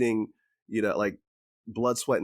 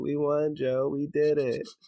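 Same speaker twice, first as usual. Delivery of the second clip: high, very slow, deliberate, drawn-out delivery; 6 semitones higher than usual. Retelling a scene as if Kamala Harris said it: Kamala Harris impression. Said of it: "Kamala Harris. She's like".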